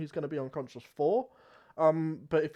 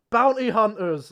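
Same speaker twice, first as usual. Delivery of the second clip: very loud, high shout at full volume; 5 semitones higher, 9 dB louder than usual. A man sprints away from the group, shouting. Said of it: "he sprints away and he shouts".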